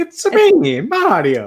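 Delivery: mock cartoonish Italian accent. At a Halloween show, asked for his best Mario voice, he obliges: Mario voice. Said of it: "Let's hear your best Mario voice".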